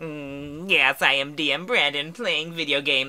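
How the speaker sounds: small, little put-on alien voice. Joking with a co-host about playing video games: little alien voice. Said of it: "with your little alien voice".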